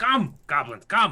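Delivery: loud, high yelling call. In a role-playing game, calling out while the others run off: yelling. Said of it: "I'm just yelling".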